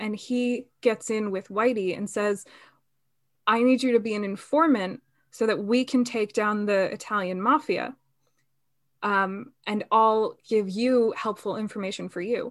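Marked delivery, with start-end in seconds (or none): none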